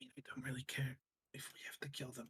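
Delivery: very quiet whisper, barely audible. Answering a plan to make enemies surrender, whispering. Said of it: "Why am I whispering?".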